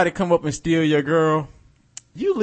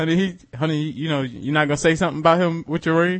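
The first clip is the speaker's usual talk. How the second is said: plain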